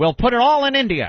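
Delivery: put-on swooping, high, old-time thirties-movie diction. Imagining a corporate executive pitching an idea: 1930s movie voice. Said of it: "Why am I talking like a nineteen thirties movie?".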